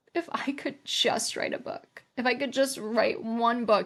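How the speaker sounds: mock voice, utterly despairing, hopeless, pleading tone. Retelling an answer to a sister-in-law's question at Christmas: imitating own despairing voice. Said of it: "literally said it with the most despair ever".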